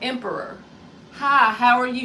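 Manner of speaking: loud, polite, professional customer-service voice. Showing the polite professional way of greeting someone: customer service voice. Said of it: "You know our customer service voice".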